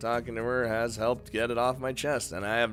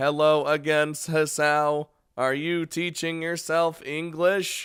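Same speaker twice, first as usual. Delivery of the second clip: robotic computer voice, higher and louder; 5 semitones higher, 5 dB louder than usual. Reading a character's line aloud in a computer robot voice. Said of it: "I'm just defaulting to fucking computer robot".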